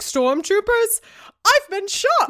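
very high computerized robot voice. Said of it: "a computerized voice starting up, and he's like".

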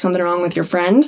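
normal talking voice

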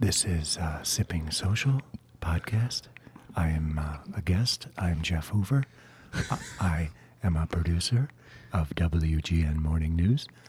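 hushed golf commentator voice. Podcast guest, asked to keep it up, introduces himself in the golf voice. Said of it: "You should just talk like that the whole time".

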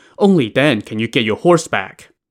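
ordinary delivery, nothing marked

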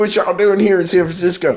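put-on Florida man accent. Joking about a Florida man turning up in San Francisco: put-on Florida man accent. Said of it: "That's the accent of a Florida man".

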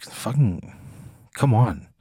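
soft mutter, mumbled under the breath. Voicing a character whose offer to help is refused: mumbling under the breath. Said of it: "she kinda mumbles under the breath".

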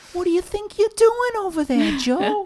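put-on very high, very loud, thick, overdone New York accent. Mocking an actress's line delivery in a film: hammed-up New York accent imitating Karen Young. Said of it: "also really hamming up her New York, uh, accent".

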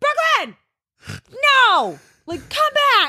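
play-acted very high yelling. Retelling calling from the shore to the kids: imitating own yelling. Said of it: "yelling at them so they don't die".

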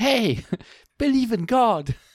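very high, bouncy cartoon animal voice. In a chat about angelic voices, a Sonic impression. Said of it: "Sounds like Sonic".

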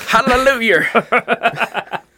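put-on Southern preacher accent, very high, shrill, very loud. Asked why they always go Southern, saying it in a mock Southern accent. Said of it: "That's such a fun accent to mock".

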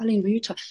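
mock gentle, very calm. Retelling what a lady asked after a meeting: imitating someone speaking very calmly. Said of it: "very calmly".

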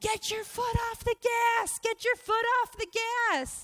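very high, loud scream. Retelling a driving lesson, quoting the instructor, imitating instructor screaming. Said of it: "he's screaming at me".

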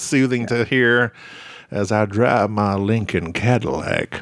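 put-on deep Texas drawl. After Matthew McConaughey is mentioned, the speaker does Matthew McConaughey deep Texas drawl. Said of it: "that deep Texas drawl".

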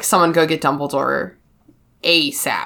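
deep, gravely serious, no-nonsense delivery. Retelling a scene, imitating Percy's serious voice. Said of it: "his voice gets really serious".

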